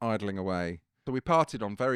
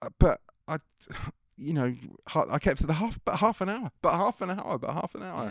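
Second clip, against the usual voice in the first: high, whiny voice on the verge of crying; 8 semitones higher, 4 dB louder than usual. Retelling being cut short by a man late for radio, speaker mimics himself about to cry. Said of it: "just about to start crying".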